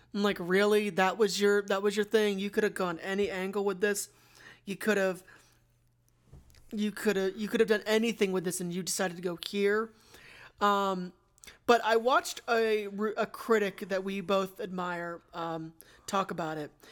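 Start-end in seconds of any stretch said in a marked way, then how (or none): none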